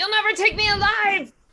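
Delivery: startled, very high, very loud yell. A role-play player's character startles awake in the scene and cries out, shouting. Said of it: "I shout".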